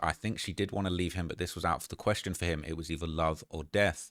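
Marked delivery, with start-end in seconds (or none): none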